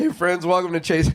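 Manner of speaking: voice cracking. A podcast host opening an episode with a guest, voice cracking. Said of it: "my voice cracked".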